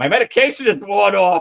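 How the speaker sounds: mincing comic delivery. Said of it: "in this kind of mincing comedic way".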